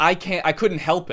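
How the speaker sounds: normal talking voice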